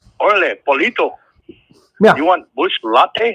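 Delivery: put-on Salvadoran accent. Retelling an El Salvadoran man offering someone a drink, in a thick Salvadoran accent. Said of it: "El Salvadoran man with a thick accent go".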